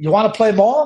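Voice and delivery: put-on light, little Italian accent. Retelling a father asking his son after a game, in a little italian accent. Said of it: "in his little Italian accent".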